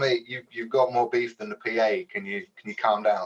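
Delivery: ordinary delivery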